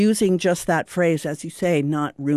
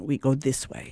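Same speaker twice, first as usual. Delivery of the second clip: English with a put-on German accent, short and simple; 3 semitones lower, 5 dB quieter than usual. Retelling what someone would say: german accent. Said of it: "in this German accent".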